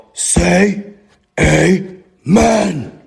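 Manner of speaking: creaky, rough, growling demonic voice. Retelling what a voice told him while panicking in REM sleep, growling voice. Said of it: "in a growling like voice".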